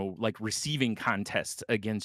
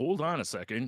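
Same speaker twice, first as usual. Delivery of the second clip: cartoonish comic-book villain, brutish voice; 3 semitones higher than usual. Joking about gladiators being like comic book cartoon Bane: cartoon Bane voice. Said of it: "comic book cartoon Bane, you know? ... Where he's like".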